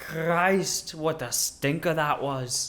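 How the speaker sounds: put-on, mock Scottish accent. Prompted to switch to a Scottish voice next, Scottish accent.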